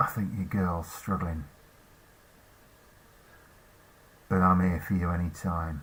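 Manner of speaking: flirty, flirtatious half-whisper. Game master voices a character leaning in close to the player's character, flirtatious half-whisper. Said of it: "she whispers in your ear".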